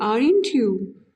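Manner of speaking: pitch drops on the tag aren't you. English intonation lesson on question tags, falling tone on aren't you. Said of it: "aren't यू के ऊपर हम क्या लगाएंगे, falling टोन".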